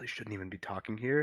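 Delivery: quiet, kept-down, hushed low undertone. Playing a character, speaking to a suspected conspiracy theorist, hushed voice. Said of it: "I'm gonna keep my voice down".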